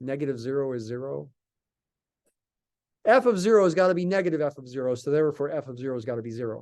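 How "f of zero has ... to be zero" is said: rattled off very fast. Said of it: "I said that really fast".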